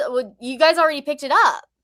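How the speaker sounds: acted confused, thrown, puzzled, high voice. Retelling how he answered when asked about news, imitating a confused voice. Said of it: "And he sounds confused".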